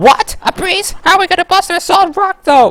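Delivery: voice pitched way up and pushed hard. Reading out a character's lines aloud in Toad voice. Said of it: "that's enough Toad voice".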